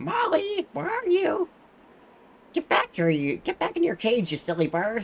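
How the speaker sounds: very high, screechy, bird-like squawky voice. Imitating how a woman with a beak-like nose talked: squawky voice. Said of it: "she had this really squawky voice, like".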